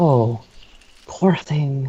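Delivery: mumbled, muttered words. A character sees the hand and speaks so only one other would hear; muttered under the breath. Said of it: "just mutters under his breath".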